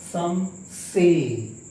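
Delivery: the word say stressed and dragged long. Example of an unstressed then a stressed word: stress on say. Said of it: "the sound of this first syllable is not accented, whereas ... this syllable of this sound is accented, means dragged long".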